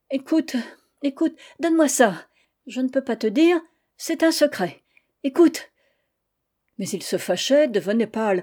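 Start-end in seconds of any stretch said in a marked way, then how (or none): 0.1-5.7 distraught, frantic stammering at higher pitch. Trying to snatch the coat from him, she pleads; distraught, stammering. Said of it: "éperdue, bégayant".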